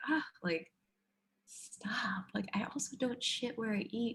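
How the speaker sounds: high whisper. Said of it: "I like that you're whispering to the camera".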